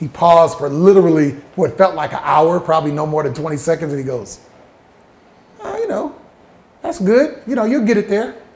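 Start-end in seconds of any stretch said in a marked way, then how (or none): 5.6-8.3 calm, mild, slightly pitched-up voice, never raised. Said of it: "Charlie talks real calm, never raises his voice".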